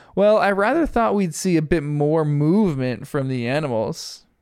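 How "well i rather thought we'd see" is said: plain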